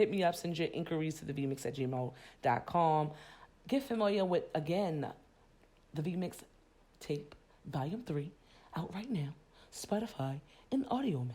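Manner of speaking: deep radio announcer voice. Reading a commercial with an email and mixtape plug: lower voice for commercials. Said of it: "That was my lower voice for the commercials".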